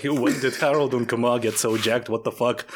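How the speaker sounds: ordinary talk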